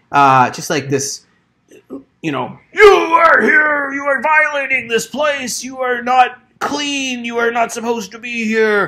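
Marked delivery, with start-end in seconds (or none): 2.7-8.8 shouting, higher. Voicing someone in a hut at the players, yelling. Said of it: "you can hear this yelling".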